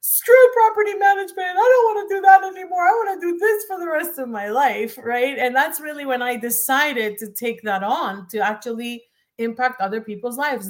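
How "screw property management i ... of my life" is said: play-acted sobbing through the words, very high, tearful outburst. Retelling what they said to a friend in the car, reenacting crying words. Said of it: "me crying and saying".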